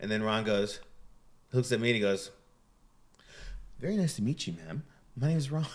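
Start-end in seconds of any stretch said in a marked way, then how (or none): 3.8-5.7 extra courteous, very proper, politeness laid on thick. Retelling how Ron Jeremy greeted the girlfriend: imitating Ron Jeremy, super polite. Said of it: "super extra polite".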